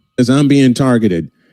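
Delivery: ordinary delivery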